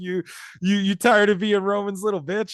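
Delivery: put-on, high, taunting, goading wrestler's shout. Retelling a wrestling match, imitating Rollins yelling at his opponent. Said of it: "Rollins starts yelling like".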